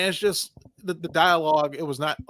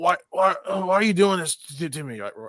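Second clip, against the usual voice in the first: put-on strained, pained voice; 3 semitones higher than usual. Describing a Superman scene, the speaker imitates Superman barely able to talk. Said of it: "he like he can barely talk".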